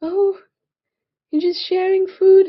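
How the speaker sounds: high, loud, delighted gushing coo.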